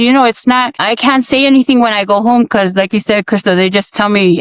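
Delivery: ordinary delivery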